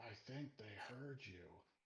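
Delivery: soft mutter out the side of the mouth. Role-play players watching creatures at a hot spring, talking out the side of mouth. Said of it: "I'm gonna say out the side of my mouth".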